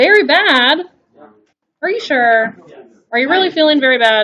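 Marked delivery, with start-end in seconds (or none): 0.0-0.8 cheery, bright, chipper and upbeat, pitched up. Answering the teacher's question about how the class is feeling: chipper. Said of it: "You sound pretty chipper".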